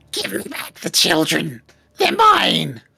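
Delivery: very angry, furious, high screeching shout. Describing a scene to listeners, the speaker voices a very angry, very screechy voice. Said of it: "a very angry, very screechy voice".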